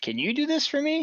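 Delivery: put-on, very high, imploring, pleading voice. Voicing a wife asking her husband for help: pleading tone. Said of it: "the tone of voice she conveyed was like".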